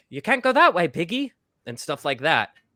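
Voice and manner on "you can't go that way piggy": put-on, vaguely British accent, pitched up high. Recalling what a panda character in a childhood game always said: panda character's British-sounding accent. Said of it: "that panda is always like".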